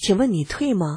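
normal talking voice

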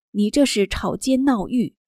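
normal talking voice

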